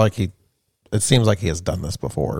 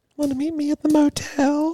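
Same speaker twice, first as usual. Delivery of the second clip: very high put-on woman's voice. Told to try to sound like a woman, the speaker attempts it, fake woman's voice. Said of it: "You try to sound like a woman".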